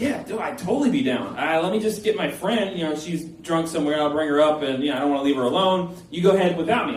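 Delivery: ordinary delivery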